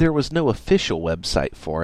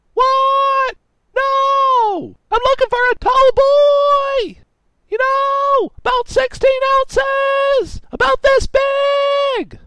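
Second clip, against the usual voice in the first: put-on shrill drunken yelling with drawn-out no; 7 dB louder than usual. Reading a story, voicing a drunk intruder in a computer repair shop, drunk screaming. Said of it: "This guy was clearly too drunk to realize he had stumbled into a computer repair shop, ... Tallboy screamed".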